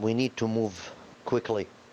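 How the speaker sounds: ordinary talk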